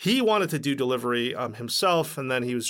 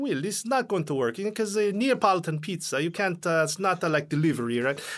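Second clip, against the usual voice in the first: put-on Italian accent, much higher; 6 semitones higher than usual. Recalling what Mario told him about the pizza plan; Mario, in Italian accent. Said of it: "in the accent".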